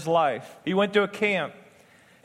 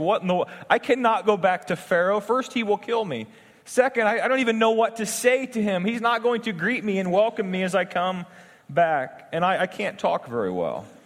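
usual speaking voice

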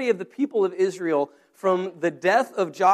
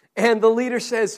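ordinary delivery

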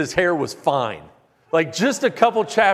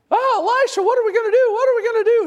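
very high, fast, panicked squealing scream; 3 dB louder than usual. Retelling a Bible scene, the servant screaming outside to Elisha, Mickey Mouse-style panicked scream. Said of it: "The servant is outside screaming".

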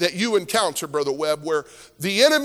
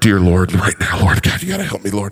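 very deep, very low, raised voice; 12 semitones lower, 5 dB louder than usual. Retelling a tense moment with a staring woman: imitating praying under breath. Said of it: "pray under my breath".

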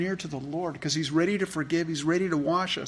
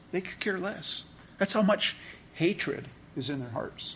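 ordinary talk, nothing marked

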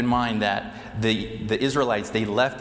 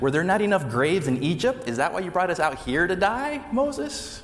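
mock, dripping sarcastic tone, high-pitched and swooping; 8 semitones higher than usual. Speaker retells the Israelites complaining to Moses, retelling a sarcastic complaint.

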